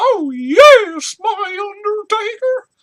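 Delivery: "yes" stretched out, very high, very loud, slow, eerie. Wondering why The Undertaker needed a manager, the speaker imitates Paul Bearer's creepy voice. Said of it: "with his creepy voice".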